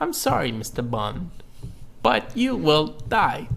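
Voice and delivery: put-on robotic voice. Joking about a famous scientist playing a Bond villain: imitating Stephen Hawking's robotic voice. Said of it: "him and his robotic voice".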